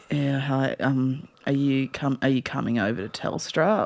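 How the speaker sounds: very soft, very deep, slow, sluggish, low-energy. Retelling a shop worker's greeting to a customer: imitating a low-energy guy. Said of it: "the complete opposite energy of Con".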